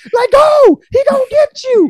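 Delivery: very high, drawn-out, yelled horror-movie-style scream. Retelling own reaction while watching a scene: imitating a scream at a horror movie. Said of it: "I sounded like someone screaming at someone in a horror movie".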